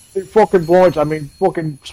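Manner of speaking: put-on Brummie Birmingham accent.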